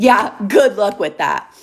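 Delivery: put-on words laughed out maniacally. Retelling one's own reply to hearing who he was seeing: imitating maniacal laughing while talking. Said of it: "I start maniacally laughing".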